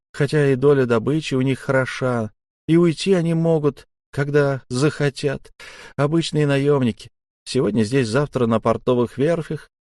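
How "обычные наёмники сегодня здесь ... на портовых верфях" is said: ordinary delivery, nothing marked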